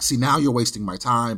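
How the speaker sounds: put-on annoyed, irritated tone. Retelling what the person at the window said: imitating an annoyed reply. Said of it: "he gets a little pissed off".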